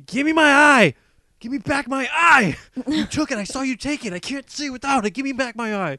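shrill, very high, loud shrieking scream. Retelling a woman screaming at a couple on a bench, retelling a scream. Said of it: "she was screaming".

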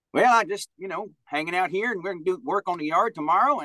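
put-on Southern accent. An impressionist describes a man's vocal handles, imitating him: Southern accent impression. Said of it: "he had a Southern accent".

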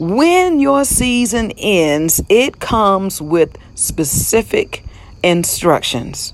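measured, unhurried, word-by-word delivery. Speaking about Elijah's specific instructions, saying it slow and deliberate. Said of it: "I want to say that slowly so you can understand the words that are coming out of my mouth".

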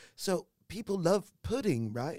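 high-pitched, put-on British accent. Retelling a scene from a show, imitating a lady: put-on British accent. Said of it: "And it's all British accent".

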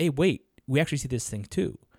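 ordinary talk, nothing marked

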